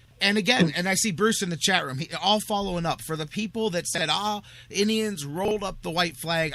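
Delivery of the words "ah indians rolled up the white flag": normal talking voice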